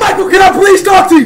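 loud screaming. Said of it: "You're screaming too much".

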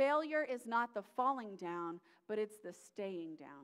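stress on the word failure.

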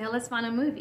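normal talking voice

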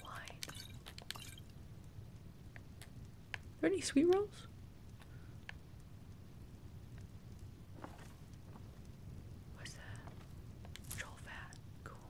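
hushed whisper. Looting items in a game while sneaking, whispering. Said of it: "Why am I whispering?".

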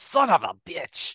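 angry outburst. Game master voicing her as she pulls herself out from under a war machine, angry outburst. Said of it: "she angrily pulls herself out".

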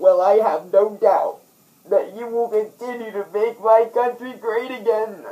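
put-on weepy crying voice, high and loud. Dubbing a clip, speaking to Donald: fake crying. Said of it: "I'm not supposed to be crying to this extent".

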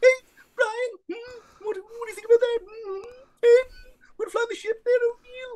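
voice pushed very high into a cartoon squeak. Retelling how a man's voice changed while talking to Brian: Stewie from Family Guy voice. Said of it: "his voice kind of went up a little bit, you know, a little bit like this".

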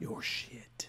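whispering close into the mic. Echoing another speaker's words into the mic, whispering. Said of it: "Is me whispering into the mic".

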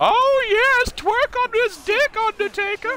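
creepy, shrill, eerie, very high and loud voice. Riffing on the Undertaker and his urn, doing a Paul Bearer impression. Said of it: "doing the Sandman voice and the Paul Bearer".

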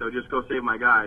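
plain

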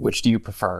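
hushed, voiced stage half-whisper. Half-whispering a question to the drink in character: quiet half-whisper. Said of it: "I'm gonna quietly whisper to the drink".

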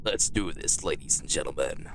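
brisk narrator-style voice. Streamer starting a game, addressing ladies and gentlemen in a narrator voice. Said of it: "My narrator voice has just been activated".

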